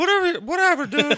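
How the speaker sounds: put-on upset yelling voice. Imitating a friend yelling at somebody when upset: Mickey impression yelling. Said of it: "That's my Mickey impression".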